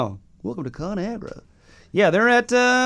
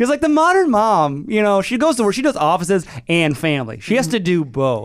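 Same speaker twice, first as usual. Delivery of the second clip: high, upbeat, slick mock ad-man pitch. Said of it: "you're in Mad Men?".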